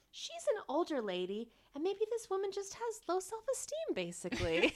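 acted, very high, swooping, extra-understanding lilt. Retelling Portia in the confessional, mock-understanding Portia impression. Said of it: "In the most understanding tone".

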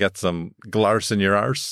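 slow, attempted Irish accent.

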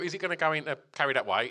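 plain

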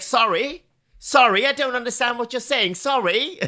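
put-on Australian accent. Retelling how he answers certain callers, the speaker pretends not to understand, in a put-on Australian accent. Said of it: "is that your Australian accent?".

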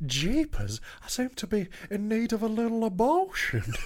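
very high, sing-song, swooping put-on Southern belle accent. Playing a little Southern belle in a made-up scene, Southern belle voice. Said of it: "I'm just a little Southern Belle".

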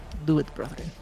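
close-up, hushed whisper. Voicing a rogue who leans in close, whispering. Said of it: "He just whispers, "Do it."".

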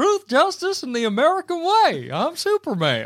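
put-on southern drawl. Imitating the movie's Superman voice: Superman sounding like Hank Hill. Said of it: "He sounds like Hank Hill".

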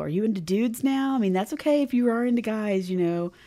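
loud, high, teasing, taunting jeer. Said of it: "they start razzing on him".

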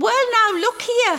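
very high, bold, courageous shout. In the story, Effie suddenly gets to her feet: brave shout. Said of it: "she shouts in her bravest voice".

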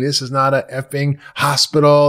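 imitated scream. Retelling what the head chef screamed: imitating the head chef screaming. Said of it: "he screamed at me".

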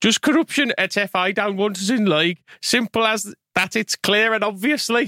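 spoken in a Wolverhampton accent. Reading a comment aloud to co-hosts, in a Wolverhampton accent. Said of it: "in a Wolverhampton accent".

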